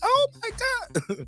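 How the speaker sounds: very high-pitched squealed exclamation. Retelling own reaction to a big bet: high pitch like Errol Spence. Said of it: "you heard my voice go at high pitch like Errol Spence".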